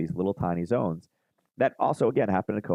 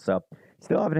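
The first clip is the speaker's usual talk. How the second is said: voice breaking and cracking mid-sentence; 9 semitones higher than usual. Walking through price levels on a chart: voice cracking. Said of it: "listening to my voice crack".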